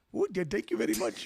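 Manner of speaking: loud put-on Indian accent. Asked to do an accent for each country named, an indian accent.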